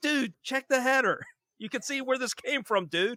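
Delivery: mock very high-pitched yell. Retelling yelling at the television during the first episode, retelling a yell at the TV. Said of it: "I'm yelling at the television".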